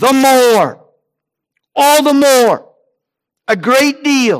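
high, loud crying out. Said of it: "he cried out".

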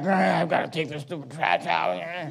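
very quiet, low grumbling mutter under the breath. Acting out a child told to take out the trash: imitating someone mumbling under their breath. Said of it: "someone kinda mumbling, you know, below their breath".

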